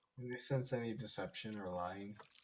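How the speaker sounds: very quiet, hushed half-whisper, all breath. Repeating a question the other speaker did not hear: half-whispering. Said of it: "I'm still whispering it".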